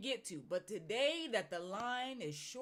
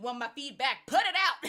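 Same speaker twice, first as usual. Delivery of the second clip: put-on nagging tone, louder; 3 semitones higher, 12 dB louder than usual. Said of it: "it literally sounds like I was nagging on you".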